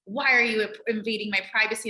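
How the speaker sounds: ordinary delivery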